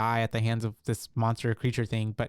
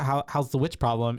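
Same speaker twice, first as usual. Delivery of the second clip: ordinary delivery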